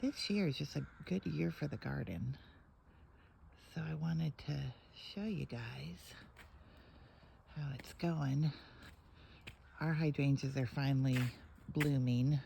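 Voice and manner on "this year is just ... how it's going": hushed, soft, low-key quiet chatting. Early in the morning, a speaker shows viewers the garden, talking quietly. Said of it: "I'm kind of talking quiet because it's kind of early".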